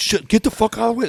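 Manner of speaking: very high, blunt, crude cursing, fired off. Contrasting the polite version with a rude one: Branch Warren version. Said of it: "That's a Branch Warren version".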